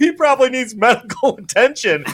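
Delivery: talking through laughter. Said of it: "They're like".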